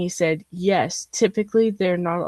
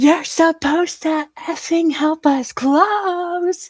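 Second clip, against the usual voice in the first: mock shrill, very high, loud, full-force yell, drawn out at close; 11 semitones higher, 5 dB louder than usual. Recounting a man yelling at them in a parking lot, retelling a yell. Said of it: "this dude yells".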